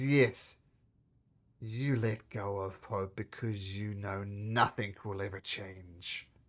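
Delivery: sour, embittered, bitter-toned voice. Voicing a spirit who speaks again as the party enters: bitter tone of voice. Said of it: "There's a bitter tone to his voice".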